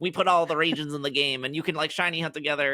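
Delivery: high-pitched put-on nerdy voice. Quoting the makers of fan-made MMOs in a nerd voice. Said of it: "my nerd voice again".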